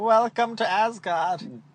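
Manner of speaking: loosely British, funny put-on voice. Host introducing a guest, in a vaguely British funny voice. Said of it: "you do kind of like a vaguely like British accent".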